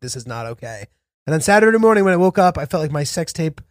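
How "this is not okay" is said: put-on sorrowful hush, very quiet. Retelling a boyfriend getting on the phone: imitating a sad voice. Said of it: "His voice was so sad".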